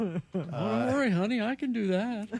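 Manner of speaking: very slow, dim, dopey voice, high-pitched. Redoing a role from an old ad together: dumb husband voice. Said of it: "The dumb husband voice".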